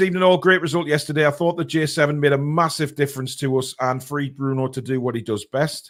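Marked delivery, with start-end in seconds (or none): none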